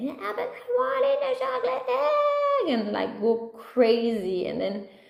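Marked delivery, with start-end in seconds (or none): 0.0-2.8 put-on very high rising shriek, egg stretched out. Retelling a child demanding a chocolate egg: imitating Esteban screaming. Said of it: "he keeps asking and screaming that".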